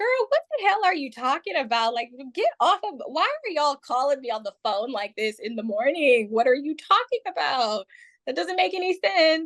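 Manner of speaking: acted nervous giggling. Retelling their reaction to a confusing morning phone call: retelling giggling while talking. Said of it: "I was giggling".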